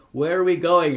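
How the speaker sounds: loud, high calling out. A first-person narrator calls to the pilot over the plane's motors, shouting over engine noise. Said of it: "I shouted over the din".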